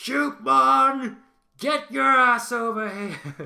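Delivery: very loud, shrill, high, drawn-out bellowing roar. Voicing a lion character calling a small creature over: roaring loudly. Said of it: "he roars really loudly".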